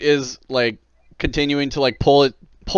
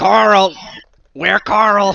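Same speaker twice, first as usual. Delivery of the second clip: croaky, higher-pitched croaking newt-creature voice; 6 semitones higher than usual. Voicing a newt person who grabs the pole: croaking newt person voice. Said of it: "sort of croaks at you".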